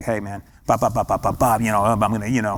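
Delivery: soft-spoken, menacing gangster voice. Acting out how gangsters talk to scare you: soft, quiet gangster voice. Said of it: "they do the soft voice to scare you".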